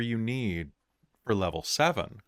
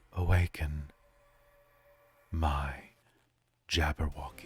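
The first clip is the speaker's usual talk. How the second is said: whispered, lower pitch; 4 semitones lower than usual. A storyteller voicing a woman whispering into a crystal ball, whispering. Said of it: "she whispers down into it and whispers".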